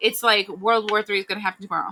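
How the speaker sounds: plain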